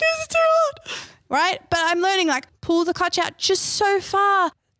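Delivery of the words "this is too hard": mock bursting into tears, very high. Retelling stalling on a hill start and bursting into tears: imitating own past crying. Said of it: "I burst into tears".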